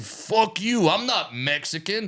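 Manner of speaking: mock drunken shouting, high and very slow. Retelling a stand-up show where a heckler yelled at the comedian: imitating a drunk man yelling. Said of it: "very drunk, just stood up and yelled at me".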